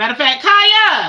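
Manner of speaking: very loud, high, stretched-out calling yell. Pausing talk to viewers to call out to Kaya, yelling. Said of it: "I'm so sorry to yell".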